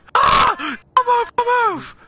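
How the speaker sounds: high, loud, panicked scream.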